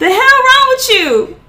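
mock yelling, very high-pitched and loud. Speaker retells her boyfriend yelling at her while she screams, imitating his yell. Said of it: "my boyfriend yelling".

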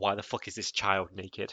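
plain

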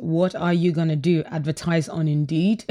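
ordinary delivery

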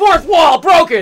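shouting. Shouting playfully about breaking the fourth wall: yelling. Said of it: "I'm yelling for no good reason!".

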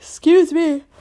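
high, slow, yawning through the words.

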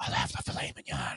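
mock hushed commentator whisper. Imagining a commentator ordering dinner at a restaurant, imitating a whispering commentator. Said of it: "And they always have to whisper".

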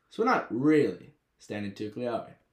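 ordinary delivery

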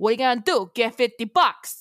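put-on New York accent. Speaker demonstrates the accent they slipped into earlier, New Yorker accent. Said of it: "that's what it sounded like".

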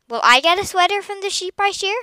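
eager, hopeful, very high voice. Josh, about to help Graciela shear the sheep, asks her, hopeful. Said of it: "asked Josh hopefully".

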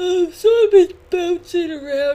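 words stretched by a yawn. Chatting casually, the speaker talks through a yawn. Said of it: "Sorry, I yawned".

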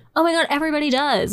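high, fast, mocking, dismissive voice.

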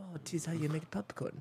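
very quiet, hushed put-on German accent. Speaker imagines a german pressing a taco shop button: german accent. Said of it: "German accent".

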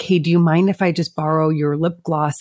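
ordinary talk, nothing marked

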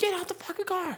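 acted shouted voice. Retelling what the cop in the video yelled at the family: imitating a cop yelling. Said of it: "that dude straight yelling the entire time".

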